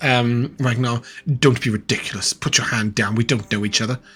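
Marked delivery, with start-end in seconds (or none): 1.3-4.0 whispered voice, lower. Voicing a noble speaking into a player's mind: telepathic whisper. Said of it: "like a whisper into your mind".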